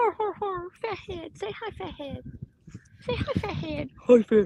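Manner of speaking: doggy voice pitched very high. Introducing the pet dogs to the others on camera: doggy voice talking to dogs. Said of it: "ignore my doggy voices".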